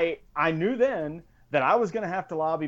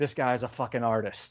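put-on muttering voice, lower and quieter; 5 semitones lower, 5 dB quieter than usual. Retelling how Stutzy walked around for two days: imitating Stutzy muttering under his breath. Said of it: "just muttering under his breath".

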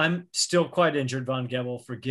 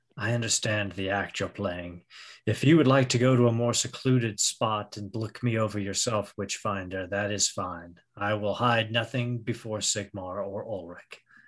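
lowered, deeper character voice; 3 semitones lower than usual. A game master, as the character, leans closer to the witchfinder and drops his voice. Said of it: "drop his voice".

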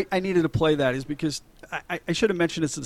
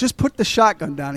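ordinary delivery

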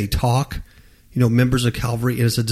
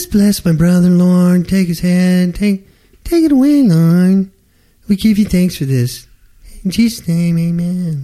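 mock prayer voice, much higher, louder; 6 semitones higher, 6 dB louder than usual. Acting out how some people pray, mock prayer voice. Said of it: "they do something like this. They go".

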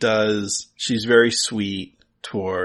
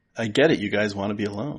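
ordinary talk, nothing marked

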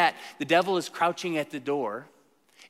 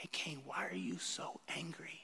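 gentle, tender, hushed whisper; 19 dB quieter than usual. A speaker quotes Genesis to listeners, voicing words spoken to Cain, quoting tenderly. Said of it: "I want you to hear it tenderly".

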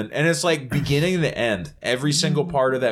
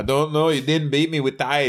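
Irish-accented put-on voice; 2 semitones higher than usual. Quoting what others said after a tie, in an Irish accent. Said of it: "that's my Irish accent".

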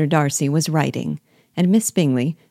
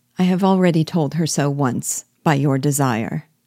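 ordinary delivery

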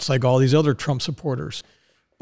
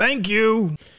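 loud, pitched-up, acted-out delivery; 7 semitones higher than usual. Telling a joke, the Trump supporter thanks the CNN reporter: retelling a loud reply. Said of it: "says in an equally loud voice".

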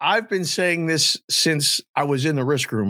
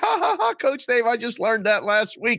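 mock laughing speech, higher pitched; 8 semitones higher than usual. Retelling what the wrestler said after the hold: imitating someone laughing while talking. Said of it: "And she's laughing".

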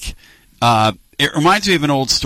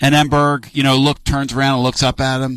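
ordinary talk, nothing marked

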